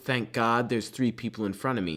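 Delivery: ordinary delivery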